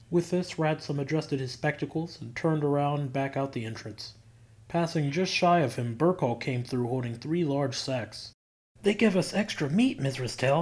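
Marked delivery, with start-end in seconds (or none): 8.8-10.6 eager, full of keen enthusiasm. Narrator reads Burkhall coming in with sacks and speaking to Missus Tell, enthusiastically. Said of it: "he said enthusiastically".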